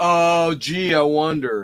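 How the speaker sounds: very slow, heavy, thick sarcasm. Reacting to an easy horror trivia question: thick sarcasm. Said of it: "The sarcasm, Chance. It's thick".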